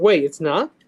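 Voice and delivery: deflated, crestfallen, let-down, disappointed tone. Reacting to another speaker's remark: disappointed. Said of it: "why did you sound disappointed?".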